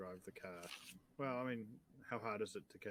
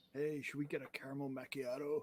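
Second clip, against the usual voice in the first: put-on surfer-dude voice and accent, pitched higher; 5 semitones higher, 3 dB louder than usual. In a role-played scene, voice a character: surfer boy accent. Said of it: "surfer boy accent".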